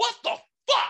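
high, wide-swinging, loud yelling.

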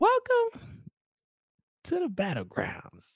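very high, swooping, goofy announcer voice. Quoting the catchphrase of a YouTube roast show's host: funny host voice. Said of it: "with a funny voice".

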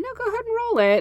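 high, fast, eager urging tone.

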